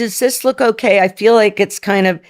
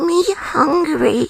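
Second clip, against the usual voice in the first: cute, high-pitched little toy-character voice; 8 semitones higher than usual. Doing, when asked, the voice used with a husband to be cute: Labubu voice. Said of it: "it's my Labubu voice".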